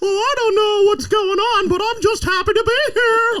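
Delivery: high-pitched, loud, squeaky voice. Joking about how someone sounds, doing a Mickey Mouse voice. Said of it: "no one's ar- complaining about Mickey Mouse's voice".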